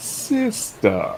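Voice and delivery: petty, breathy single word, breathed out. Quoting a film villain's line about the tone: petty Darth Vader voice. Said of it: "James Earl Jones did that, voiced that tone perfectly".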